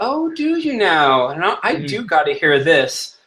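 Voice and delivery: slow, swooping, sarcastic, condescending tone. Voicing a game character who answers another character's offer, condescending, sarcastic tone. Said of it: "a very kind of a condescending tone".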